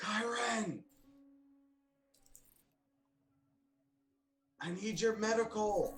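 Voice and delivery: whisper-shout. In a tabletop game, a character calls outside for a teammate's medical help: whisper-yelling. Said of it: "whistle and sort of like whisper, yell outside".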